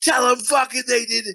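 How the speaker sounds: high, ratty yell from the background. Imitating a wife heard yelling in the background of a phone call: imitating a ratty wife yelling in the background. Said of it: "just some ratty bitch in the back".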